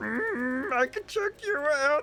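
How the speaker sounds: put-on very high, leering old-man voice, stretched mm. Describing how an old man voice became another, the speaker does a slightly pervy Yoda voice. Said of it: "he became slightly perverted".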